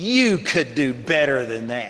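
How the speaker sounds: low, mock taunting, sarcastic jab. Retelling how a man a few steps ahead looked over his shoulder, retelling a sarcastic jab. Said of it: "real sarcastic says".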